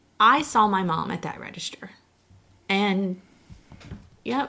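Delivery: voice tearing up, on the verge of crying. Recounting a hard two weeks with mom, starting to cry. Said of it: "I told you it was coming".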